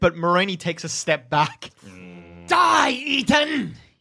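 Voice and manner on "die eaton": high, screeching, menacing voice. Game master voicing Moroni as he steps back from the player, screeching. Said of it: "He screeches at you".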